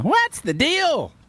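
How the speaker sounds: put-on nasal comic voice. Showing how imitating Jerry Seinfeld works: raised nasal Jerry Seinfeld voice. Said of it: "raises his voice and gets nasally".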